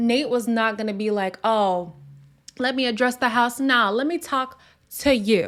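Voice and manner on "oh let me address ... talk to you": ordinary talk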